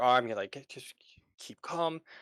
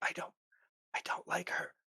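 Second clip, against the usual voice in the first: fearful whisper, barely voiced; 6 semitones higher, 7 dB quieter than usual. Voicing a frightened character whispering to a player: whispering in fear. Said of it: "whispering to you".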